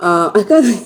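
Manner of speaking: giggling mid-sentence, words breaking off.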